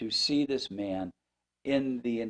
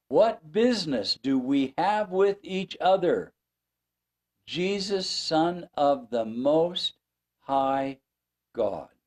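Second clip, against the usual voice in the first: man's high, loud screaming cry; 5 semitones higher, 6 dB louder than usual. Speaker acts out a kneeling man's words to Jesus, retelling a scream. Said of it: "he screams".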